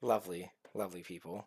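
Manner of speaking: dripping sarcasm, praising tone laced with dread. Reacting to what was just described: pure sarcasm and dread. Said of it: "I say that with pure sarcasm and dread".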